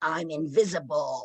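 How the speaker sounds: throaty growl from the chest. Retelling a voice heard on a tape recording: imitating a growly voice. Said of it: "in that growly again".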